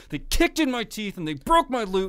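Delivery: angry, pissed-off tone with pitch climbing upward. Explaining how the voice rises when pissed off, angry with pitch rising high. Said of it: "you can already hear it happening in my voice".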